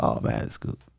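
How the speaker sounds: soft, voiceless whisper.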